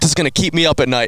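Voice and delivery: mock-angry, put-on angry man voice. Recounting what a man said about the damage, imitating an angry man. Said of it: "And he's like angry".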